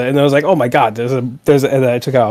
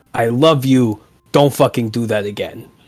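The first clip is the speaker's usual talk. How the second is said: put-on stern, firm delivery. Retelling how two companions sounded when they scolded: imitating a stern but firm tone. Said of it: "a stern but firm".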